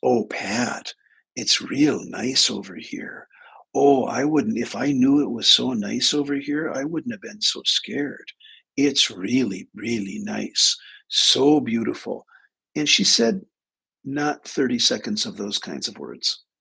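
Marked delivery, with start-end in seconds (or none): 0.0-12.2 put-on plain Upper Midwest Minnesota accent. Alone in the car, the speaker retells his sister's words in her Minnesota accent. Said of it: "in her Minnesota accent".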